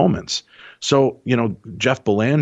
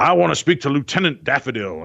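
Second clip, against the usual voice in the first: high, mock authoritative, commanding voice; 5 semitones higher than usual. Describing a paranormal investigator calling out to a lieutenant's spirit, mock commanding voice. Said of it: "start talking in this commanding voice".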